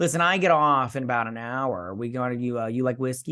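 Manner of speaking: ordinary talk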